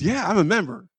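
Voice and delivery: genuinely proud, small-voiced tone. Retelling his answer when asked if he was old enough to vote: proud. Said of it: "he was all proud".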